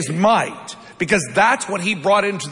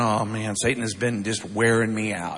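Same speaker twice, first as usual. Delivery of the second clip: acted-out weary, beaten-down, defeatist tone; 9 semitones lower, 6 dB quieter than usual. Acting out how we answer when asked how our week is going: imitating a defeatist tone. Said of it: "we say that in almost this defeatist tone".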